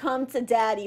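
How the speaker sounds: ordinary delivery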